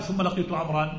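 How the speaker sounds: ordinary talk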